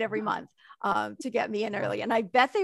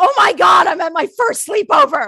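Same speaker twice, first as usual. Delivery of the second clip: sudden, very loud, high-pitched shrieked outburst; 8 semitones higher, 15 dB louder than usual. Retelling popping up off the floor at a first sleepover, reenacting own scream. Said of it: "I just like pop up and I scream".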